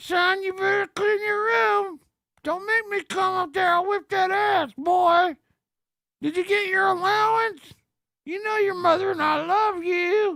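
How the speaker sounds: ventriloquist voice. Imagining a dad scolding his son this way, talking through someone's lips. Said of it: "Imagine if you if your dad talked like that".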